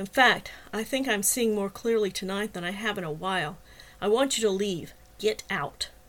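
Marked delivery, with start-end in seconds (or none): none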